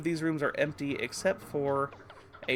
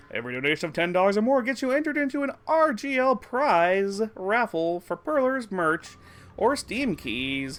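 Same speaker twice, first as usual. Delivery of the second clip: big event-announcer voice, loud and raised; 5 semitones higher, 6 dB louder than usual. Streamer announces the donation raffle, big announcer voice. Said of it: "I gotta get my like my big announcer voice back".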